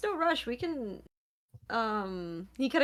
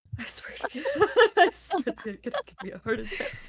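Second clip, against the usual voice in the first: muttered nervous fretting, pitched up; 6 semitones higher than usual. Voicing a character who is crashing out, Loomis muttering really quietly. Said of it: "you hear him like really quietly be like".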